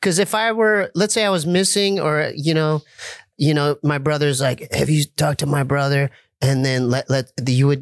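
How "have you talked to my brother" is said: grizzly put-on impression voice. Imitating a brother asking about his missing sibling: imitating brother with grizzly voice. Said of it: "That's some grizzle in your voice".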